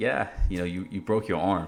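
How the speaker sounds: normal talking voice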